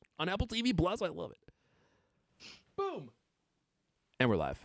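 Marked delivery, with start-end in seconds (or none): 2.8-4.6 subdued, restrained, understated public-radio announcer style. Opening the live show for a co-host, soft and subdued. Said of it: "how soft and subdued that was".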